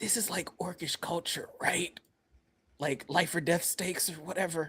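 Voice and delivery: quiet, hushed, whispered aside. Whispering a question to a character during a tense game scene: whispering. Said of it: "gonna whisper to Mero's".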